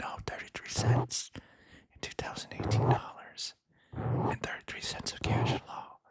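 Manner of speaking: hushed whisper.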